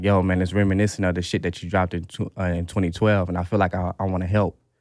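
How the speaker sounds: normal talking voice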